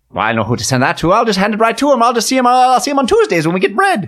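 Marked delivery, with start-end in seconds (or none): 1.2-4.1 put-on high stage leprechaun Irish accent. Chatting about the Henderson boy, speaking in a leprechaun accent. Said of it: "you said in your leprechaun accent".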